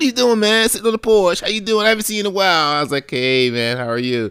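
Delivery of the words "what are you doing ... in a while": very high, loud, rapid-fire chatter. Retelling a guy on a bike greeting him on the porch, talking fast. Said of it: "speaking all fast".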